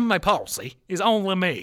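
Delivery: very slow, loud, drawn-out country drawl. Speaker telling a story about throwing a fishing line out, country accent. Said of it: "I don't know why I did a country accent there".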